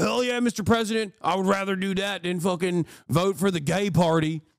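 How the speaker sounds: mock gung-ho, eager, enthusiastic tone. Mocking supporters who cheer the threats: imitating eager supporters. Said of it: "And these guys go".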